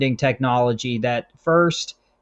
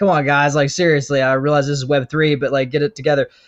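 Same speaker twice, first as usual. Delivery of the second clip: usual speaking voice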